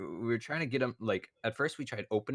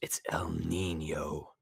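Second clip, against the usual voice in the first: put-on whisper, lower; 5 semitones lower than usual. Retelling how someone named a mosquito in a frozen room: imitating someone whispering. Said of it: "and so he whispers".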